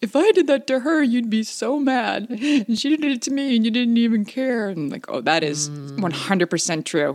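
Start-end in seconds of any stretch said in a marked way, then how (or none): 0.0-4.7 put-on high, tearful, teary childlike voice. A mother retells her child's complaint, imitating him getting teary. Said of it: "he got teary and he said".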